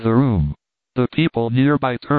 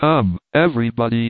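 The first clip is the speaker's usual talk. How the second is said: ordinary delivery, nothing marked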